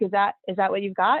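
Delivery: plain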